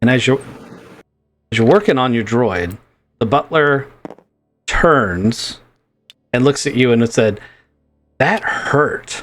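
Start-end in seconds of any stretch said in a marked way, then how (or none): 8.2-9.2 put-on voice of a little old woman. Voicing a butler droid turning to look at the players, elderly old lady's voice. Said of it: "in an elderly old lady's voice".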